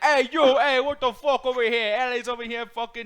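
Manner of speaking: put-on Jamaican Queens accent. Joking about New York, putting on a mock Jamaican Queens accent. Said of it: "You went from like Jamaican Queens".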